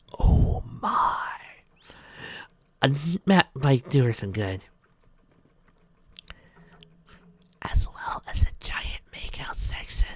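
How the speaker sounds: hushed whispering. Reading a story aloud, whispering a joke aside. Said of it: "The reason why I'm whispering".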